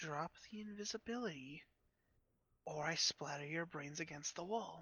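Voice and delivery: very soft, hushed voice. A game master voices an unseen figure behind a player's character, in a very soft voice. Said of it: "you hear in this very soft voice".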